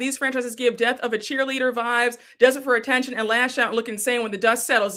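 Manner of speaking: plain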